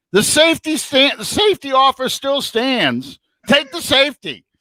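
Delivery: very high, loud stadium-style yell. Telling how he shouted to a player in the end zone, retelling a yell. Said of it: "I'm yelling".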